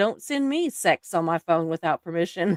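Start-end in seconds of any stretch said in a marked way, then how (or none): none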